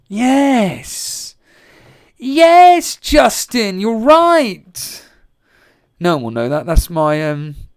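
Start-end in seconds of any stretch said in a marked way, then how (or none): 0.1-5.0 deliberate, loud, swooping, drawn-out sing-song delivery. Doing an impression of Jason Cundy from Talk Sport: Jason Cundy impression. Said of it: "impression of Jason Cundy".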